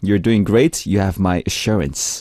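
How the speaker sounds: plain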